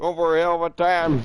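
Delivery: put-on Southern accent. Joking about a hunting game, breaking out a put-on southern accent. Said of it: "break out the southern accent".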